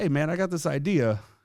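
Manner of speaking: put-on slight hint of an Italian accent. Recalling running into him on the field before the game, do an Italian-sounding Mike Claiborne impression. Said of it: "You're kind of making him sound Italian".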